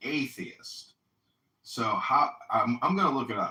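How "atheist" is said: atheist whispered slowly, each syllable drawn out. Explaining an irony in a word, saying atheist slowly syllable by syllable. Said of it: "if you say it slowly".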